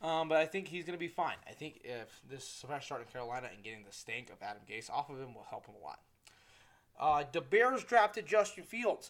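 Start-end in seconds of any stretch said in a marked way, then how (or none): 7.3-9.1 very loud, pitched-up, terrible Chicago accent. Speaker going through football news, in a bad Chicago accent. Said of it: "that was the worst Chicago accent".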